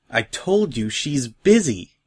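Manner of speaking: guarded, defensive, slow delivery. Narrator reads a character answering another's question, defensive. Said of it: "said Silver Spoon defensively".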